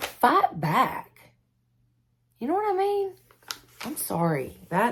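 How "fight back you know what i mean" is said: upset, higher pitch. Explaining why skipping devotionals means letting him win: angry. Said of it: "I'm angry today".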